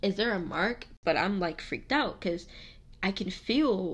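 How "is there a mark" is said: ordinary delivery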